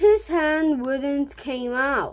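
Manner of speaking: ordinary delivery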